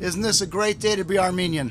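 ordinary delivery

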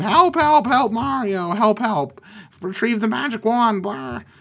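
high, screaming, squealing cries, over and over. Describing a build where Toad calls to Mario: imitating Toad screaming. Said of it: "Toad is over here screaming".

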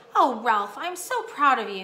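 spoken on a relieved sigh. A mother speaks to her son, with a sigh of relief. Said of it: "said his mother with a sigh of relief".

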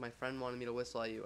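ordinary delivery

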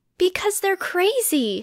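high, emphatic, exclaimed outburst. Narrator reads a character answering another's question, exclaiming. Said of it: "Hermione exclaimed".

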